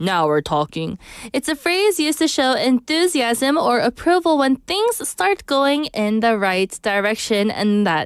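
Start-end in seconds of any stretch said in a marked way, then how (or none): 0.0-1.0 very low, deep voice. Teaching an English phrase in a lesson: lower voice. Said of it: "I like to say that one in a lower voice".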